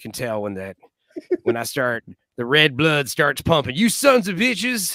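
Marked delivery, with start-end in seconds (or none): 3.7-5.0 put-on Southern accent, pitched higher. Showing how the voice comes out: Southern accent imitating father. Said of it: "channeling my father and talk in a Southern accent".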